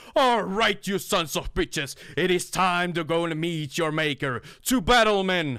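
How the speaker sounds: loud, very high-pitched rallying battle cry. Voicing an army captain on a table rallying his men: captain shouting to his men. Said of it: "shouts to his men".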